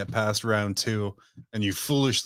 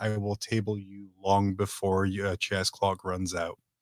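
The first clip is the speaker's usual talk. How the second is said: very hushed, quiet, understated, low-key delivery. Retelling an opponent's line about a chess clock, very quiet delivery. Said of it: "very quietly said".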